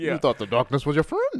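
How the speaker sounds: deep villain voice with swooping, swinging pitch. Joking around, quoting a line in a Bane voice. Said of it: "Why are you talking like this?".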